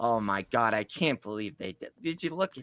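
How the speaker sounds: appalled, disgusted, disbelieving outburst. Imitating Anthony reviewing a figure: imitating Anthony sounding disgusted. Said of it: "he's just so more disgusted than pleasured".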